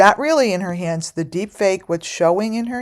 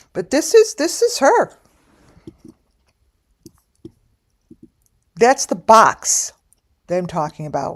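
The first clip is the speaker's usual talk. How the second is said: talking while chewing gum, higher pitch; 3 semitones higher, 3 dB louder than usual. Showing images while talking, chewing gum while talking. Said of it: "totally munching".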